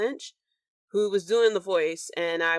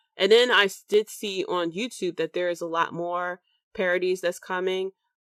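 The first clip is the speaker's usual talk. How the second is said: normal talking voice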